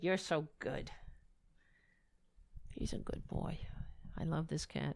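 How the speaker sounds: soft, breathy, whispery pet-talk voice. Speaker shows everybody the cat and talks to it, talking to a cat. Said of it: "I always do when I talk to the cat".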